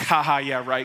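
sarcastic, apathetic, dismissive tone. Acting out a listener's inner reaction to a verse: sarcastic, apathetic. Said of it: "that sarcastic, apathetic way".

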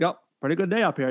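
put-on Maine accent. Acting out a comedy bit about men carving a stick on a porch, in a racist Maine accent. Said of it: "Just like this racist Maine accent".

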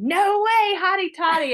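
very high, loud screaming cry. Retelling driving off after being told she could go, retelling a scream.

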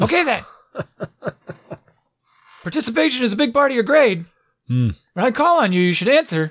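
high-pitched barking. Retelling an online class, imitating a teacher barking at students. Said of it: "she's just barking at all the kids like".

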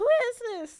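very loud, shrill, high shout. Retelling how the speaker's grandmother answered a knock at night, extra loud. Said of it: "All extra loud".

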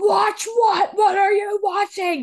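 play-acted screaming, pitched way up, very high. Retelling how he reacts when she walks up, imitating someone screaming. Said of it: "He's like screaming at her".

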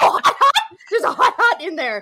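goofy, very loud, swooping hollering. Recounting how he yelled at the wrong version playing; retelling a yell. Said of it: "he was like yelling at the Packerena".

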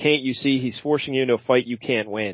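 ordinary talk

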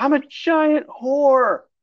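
very high, sobbing, bawling wail. Retelling a story about a woman who starts bawling, imitating her bawling. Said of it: "And then she just starts bawling".

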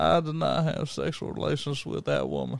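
impression of a Southern US politician's voice.

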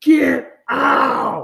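play-acted very high, very loud, rough furious scream. Retelling snapping at Callie, who kept talking while they listened to a baby: retelling an angry outburst. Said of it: "I just fucking lost my shit".

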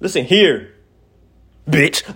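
aggressive delivery. Starting to speak to the listener: said aggressively. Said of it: "I said it so aggressive".

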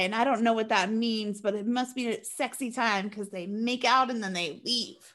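ordinary talk

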